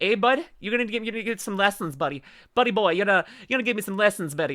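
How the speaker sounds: exaggerated, over-the-top Canadian accent, stumbling. Teasing D M about getting lessons, trying an exaggerated Canadian accent. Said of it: "I need to work on my Canadian accent".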